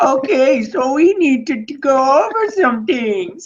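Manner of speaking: very high, very slow, drawn-out goofy drawl. Acting out a movie pitch at Netflix: Adam Sandler voice. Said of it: "he's doing the voice in the meeting".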